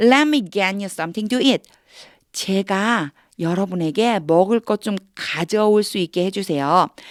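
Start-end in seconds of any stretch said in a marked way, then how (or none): 0.0-1.6 fast, words linked smoothly, no pauses. Practicing an English sentence in a lesson, smooth, no breaks between words. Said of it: "이렇게 따닥따닥 끊는 게 아니고".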